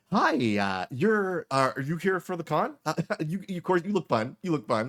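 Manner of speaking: high, loud, way-too-excited voice. Voicing a lanyard-covered attendant at a con desk: way too excited con desk attendant. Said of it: "He's like".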